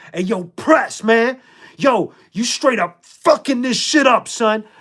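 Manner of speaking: high, mild, scolding yell. Speaker retelling what he yelled at another performer, forgetting the mic was on: retelling his own yell. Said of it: "I had just yelled at him".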